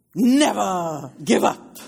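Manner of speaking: loud, authoritative, commanding, never drawn out. Retelling how a man stood before everybody and repeated himself; retelling an authoritative voice. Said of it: "said in that authoritative voice".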